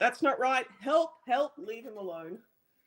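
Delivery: urgent, pleading cry. Player describing their character's action during a scuffle, shouting for help. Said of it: "I'm still shouting like".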